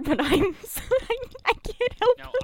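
very high, words breaking up with laughter. Apologizing for laughing at a term: laughing while talking. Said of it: "I shouldn't be laughing either".

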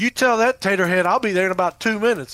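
mock all-out scream, shrill and loud. Retelling a phone call in which the caller screamed: imitating Daryl screaming. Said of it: "dude's screaming".

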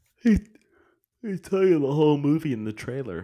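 talking through a yawn. Speaker criticizing a movie's trailer, yawning while talking. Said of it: "I'm sorry, I'm yawning".

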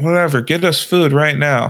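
put-on drunk kid voice, yelling. Retelling what a drunk friend said to his mom: imitating someone yelling. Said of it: "yelling at his mom".

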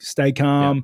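ordinary talk

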